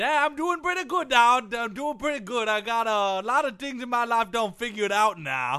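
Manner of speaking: put-on Cajun drawl. Answering a greeting in a put-on cajun drawl. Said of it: "Why are you talking like that?".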